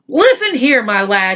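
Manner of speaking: menacing, threatening, fearsome tone. Narrator voices Mister Johnson speaking to giggling Patrick: fearsome tone. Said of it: "he said in a fearsome tone".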